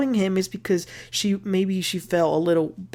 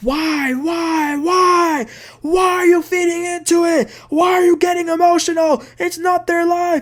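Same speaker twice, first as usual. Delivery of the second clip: play-acted very high, shrieking, screaming tirade; 10 semitones higher, 4 dB louder than usual. Retelling how he reacted to her news about the lawsuits before hanging up, imitating someone screaming. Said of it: "he starts screaming like he did".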